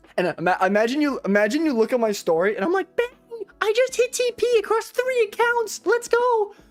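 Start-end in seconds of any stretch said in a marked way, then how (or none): 3.0-6.5 super high put-on voice, pushed way up. Speaker imagines talking this way on their own story, extremely high-pitched voice. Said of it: "imagine if I talked like that".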